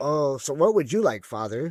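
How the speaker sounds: mock, imitated condescending tone. Retelling a custody phone call where they spoke down to him: imitating a condescending tone. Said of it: "they're being super condescending to me".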